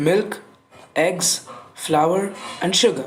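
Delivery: brief pause at every comma, after each item. Explaining commas in a list of four items: pause after each comma. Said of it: "Notice how we naturally pause after each comma in the sentence".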